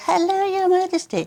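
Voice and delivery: squeaky little voice, very high. Retelling a greeting from a Netflix show, in a squeaky Meghan imitation. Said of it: "said with a squeaky voice".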